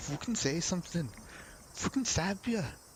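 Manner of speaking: clumsy Scottish accent. Reading a story aloud, voicing a thug's line: bad scottish accent. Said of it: "in, like, a Scottish accent".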